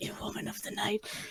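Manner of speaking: hushed, soft, breathy whisper. Retelling how the character whispered a line earlier: imitating a whisper. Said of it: "whisper that".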